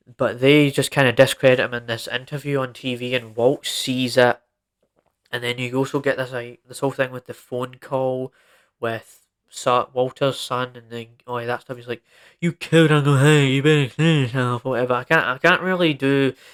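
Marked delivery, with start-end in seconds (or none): 12.4-14.6 speaking with a speech impediment. Retelling a phone call from Walter's son in a TV episode: Flynn impression. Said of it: "my best impression of, of Flynn".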